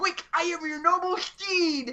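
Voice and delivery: very high nerdy voice. Retelling a skit, playing the nerd dressed as a Tauntaun. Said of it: "You do that a little too well".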